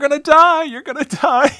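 mock scream, very high and loud. Recounting a scene of one man screaming to a shot man, retelling a scream. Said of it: "Forrest keeps screaming to Josh".

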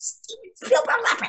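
hushed whisper, pitched very high. Retelling a call from the front desk: imitating a whisper. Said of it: "Suzanne whispers".

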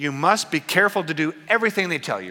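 biting, cutting sarcasm, swooping sing-song tone. Quoting Jesus warning about the Pharisees' rules: imitating Jesus, sarcastic tone. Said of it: "with sarcasm in his tone".

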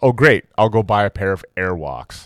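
ordinary talk

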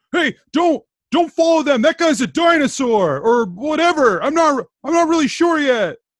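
distant shout. Voicing a character calling out from behind the group: shouting from behind. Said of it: "It's shouting as you hear".

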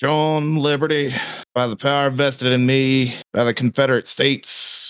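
high-pitched, projected calling-out voice. Voicing a man on horseback calling out to the players: shouting. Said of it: "he shouts".

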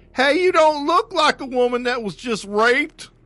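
very high, shrill, loud, scornful, derisive cop voice. Retelling what a cop told a victim, the speaker mocks the cop's voice. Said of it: "I'm making fun of the cop".

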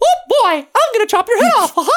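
high cartoon mouse voice. Describing a cartoony character design to the others, doing a Mickey Mouse voice. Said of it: "Why did he have a Mickey Mouse voice".

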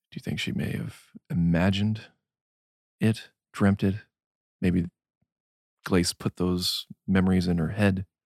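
hushed whisper. A character speaks privately to companions, out of someone's earshot, whispering. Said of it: "We'll whisper".

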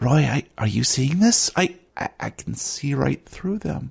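close whisper. Voicing a character who whispers in a player's ear: whispering in someone's ear. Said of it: "Danny whispers in your ear".

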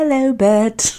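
put-on British accent. Joking about being voice actors, greeting Bert in Mary Poppins voice. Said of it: "It's Mary Poppins".

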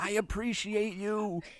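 close whisper. Playing a character who whispers in another's ear: whispering in his ear. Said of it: "I whisper in his ear".

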